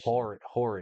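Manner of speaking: Philadelphia accent. Repeating a misheard word for another speaker: Philly accent. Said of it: "That's the Philly accent coming out".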